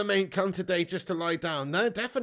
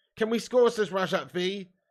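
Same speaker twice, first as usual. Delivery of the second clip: normal talking voice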